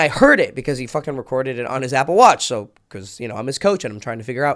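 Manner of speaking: usual speaking voice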